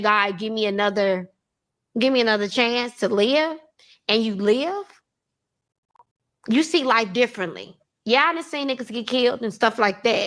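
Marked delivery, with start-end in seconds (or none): none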